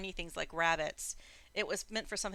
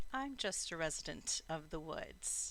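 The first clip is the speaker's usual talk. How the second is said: soft, lilting, slightly laconic, swooping voice; 7 dB quieter than usual. A narrator voices a stranger in the forest, asked who it is: lilting, laconic voice. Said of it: "a voice that's that's lilting and and you know a little bit laconic".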